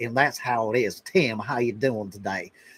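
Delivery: deep, strong southern drawl. Describing the Deep South and how people talk there, in a strong Southern drawl. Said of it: "they have a strong Southern drawl. People talk like this".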